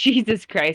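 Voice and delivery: ordinary talk, nothing marked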